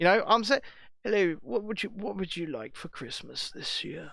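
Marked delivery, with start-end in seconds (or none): 1.0-4.1 put-on posh English accent, very hushed and soft. Showing how a Santa greets children, put on a proper English accent. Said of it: "put on the, the proper English accent".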